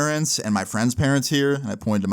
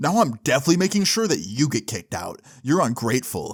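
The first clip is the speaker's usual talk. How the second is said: put-on angry tone. Retelling a camp counselor's reply after the speaker's remark: imitating an angry counselor. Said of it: "super red in the face".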